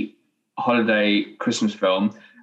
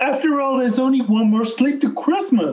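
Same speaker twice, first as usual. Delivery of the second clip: very high cartoon frog puppet voice; 14 semitones higher than usual. Performing on request, Christmas line: Kermit the Frog voice. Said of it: "you do a Kermit the Frog impression".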